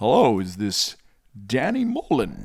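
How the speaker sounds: slow, unhurried, deliberate narrator delivery. Role-playing a phone call, doing a best Morgan Freeman impression. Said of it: "I'm gonna do my best Morgan Freeman".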